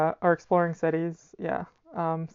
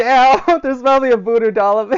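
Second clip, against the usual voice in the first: very loud, high-pitched, frightened blurt; 6 semitones higher, 10 dB louder than usual. Teasing the other speaker about their reaction: imitating someone scared. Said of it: "I feel like you got scared".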